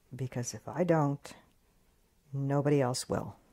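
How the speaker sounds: very soft, hushed speech. Retelling what he said to the speaker late at night: imitating someone speaking very quietly. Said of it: "he just said very quietly".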